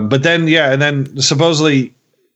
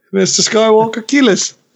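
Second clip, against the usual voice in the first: mock pleading child voice, higher; 8 semitones higher than usual. Acting out a youngling kid begging mister skywalker for help: impression of a pleading youngling kid. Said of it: "That's your impression of that one kid that talks".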